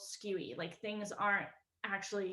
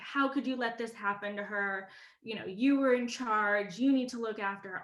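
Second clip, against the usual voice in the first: play-acted screaming, blaming scold. Retelling a mom yelling at an older sister: imitating someone screaming. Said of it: "my mom is, like, screaming at my sister".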